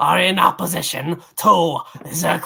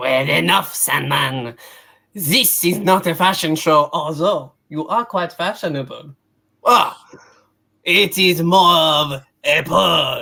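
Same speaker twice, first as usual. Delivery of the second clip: put-on French accent throughout. Voicing a character who tells Sandman off, in a French accent. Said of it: "I'm losing the accent".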